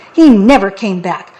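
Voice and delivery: ordinary talk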